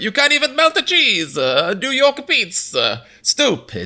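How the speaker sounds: put-on English-accented voice. Retelling the other speaker's attempt at an accent: half English half Mario accent. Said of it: "weird, half English Mario".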